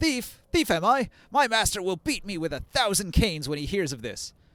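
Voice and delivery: high-pitched, yelling market vendor voice. Voicing a fruit vendor blaming someone for the damage: yelling. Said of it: "The vendor yells".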